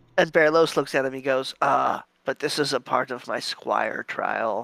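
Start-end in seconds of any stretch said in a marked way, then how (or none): 1.6-4.6 beaten, deflated, slow, defeated voice. In the game, Berlos answers Alfredo about the squire trial: Berlos, defeated. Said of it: "he says, defeated".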